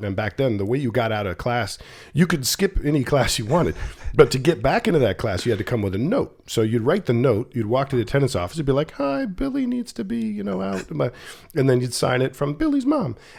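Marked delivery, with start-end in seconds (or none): 8.9-10.9 very high, slow, drawn-out, creaky put-on voice. Retelling how students handed in fake notes, imitating a put-on voice. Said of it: "I don't know why I just did that voice".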